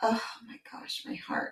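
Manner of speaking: soft, awed whisper. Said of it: "And I was like".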